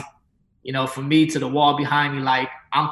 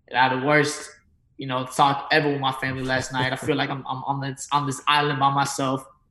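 ordinary delivery

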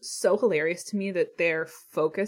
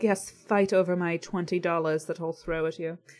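put-on rich lady's British accent. Imitating wealthy East Coast women, put-on British accent. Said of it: "I don't know why I got British there".

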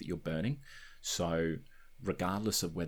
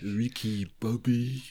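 exaggerated put-on French accent, high and loud; 5 semitones higher, 6 dB louder than usual. Mimicking how an actor says a name, exaggerated french accent. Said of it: "I'm sure he could do a better French accent".

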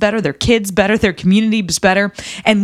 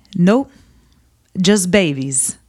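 put-on old-sounding voice with Italian accent; 3 semitones lower than usual. Retelling an old man in an Italian village answering a question, Italian accent. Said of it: "in his Italian accent and said".

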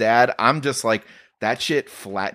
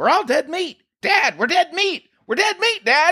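put-on very high kid's voice, yelling repeatedly. Retelling a film scene where a fleeing kid shouts to his dad, imitating a shout. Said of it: "he starts just shouting like".

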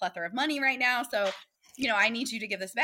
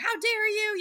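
very high, shrill, accusing yell; 12 semitones higher than usual. Retelling a woman holding a baby yelling at you: imitating a woman yelling. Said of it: "she's yelling at me".

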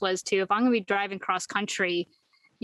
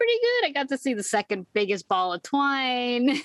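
sarcastic, swooping, "twine" drawn out; 4 semitones higher than usual. Retelling a character's answer to Diane about his trip, retelling a sarcastic reply. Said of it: "in his sarcasm".

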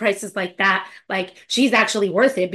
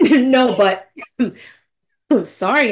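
loud, talking while choking on laughter; 5 dB louder than usual. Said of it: "I'm choking over here".

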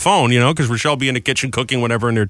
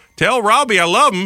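put-on Southern accent, central Florida style; 8 semitones higher than usual. Retelling a message from a woman who moved to Florida, imitating a southern accent. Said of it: "She's got that accent now".

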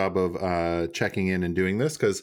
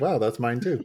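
ordinary talk

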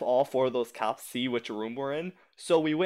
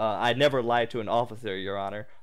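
ordinary talk, nothing marked

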